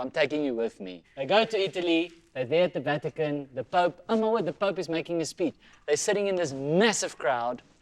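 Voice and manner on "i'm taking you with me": ordinary talk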